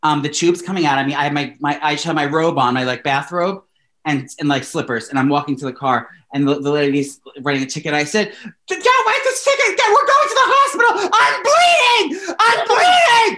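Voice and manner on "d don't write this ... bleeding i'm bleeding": put-on very high, loud, shrieking scream. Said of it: "I'm screaming at this woman".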